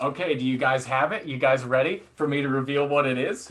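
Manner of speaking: normal talking voice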